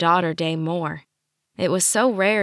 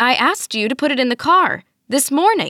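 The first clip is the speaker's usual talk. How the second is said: rising, raised voice, climbing and pitched up; 7 semitones higher, 5 dB louder than usual. Ma, gesturing to her child, voice rising. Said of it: "her voice rising".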